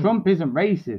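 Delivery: normal talking voice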